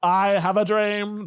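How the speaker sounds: deliberate, slow delivery, every word drawn out. Showing their own impression of a famous speech line: Martin Luther King impression. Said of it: "my M L K impression is M L K".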